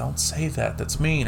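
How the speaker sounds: muttered under breath. Retelling a girl at a birthday speaking to somebody not there, under her breath. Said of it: "says under her breath".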